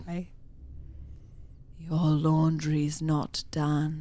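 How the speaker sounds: deep, velvety, menacing voice dripping with sarcasm. Reading a spooky story, a mysterious voice speaks: deep, velvety, sarcastic malice. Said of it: "a deep, velvety voice, dripping with sarcastic malice".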